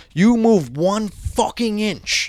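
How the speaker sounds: aggressive put-on voice. Retelling how a man threatened a prisoner: imitating an aggressive threat. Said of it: "he's being very aggressive".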